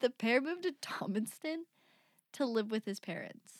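giggles breaking up the sentence, laughing through words. Reading a story aloud after being corrected on a town name: laughing while talking. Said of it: "Try that again without laughing".

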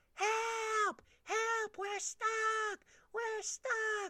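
very high, loud, long-stretched yelling, "help" drawn out. Telling how she and a friend got stuck, retelling a scream for help. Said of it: "we're screaming out of the window".

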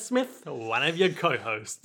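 put-on poor Australian accent.

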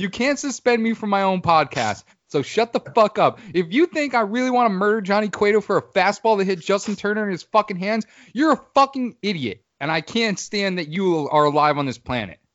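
going off angrily. Answering a commenter's tweet about him: going off in a rant. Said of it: "I went off on that".

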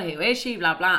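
normal talking voice

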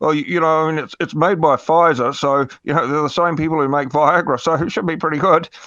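bad ventriloquist voice. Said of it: "looking like a bad ventriloquist, barely moving his lips".

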